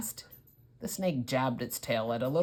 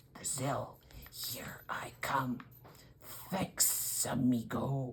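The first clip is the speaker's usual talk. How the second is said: slow, breathy, low snake hiss, whispered; 6 dB quieter than usual. Reading a story, the escaping snake speaks as it slides past: low hissing voice. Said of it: "a low, hissing voice said".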